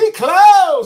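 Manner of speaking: very loud, high, shrill shouted yell. Retelling how a worker at a truck yelled out: imitating someone yelling. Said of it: "just yells out".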